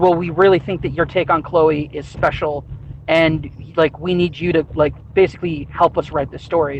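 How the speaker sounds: usual speaking voice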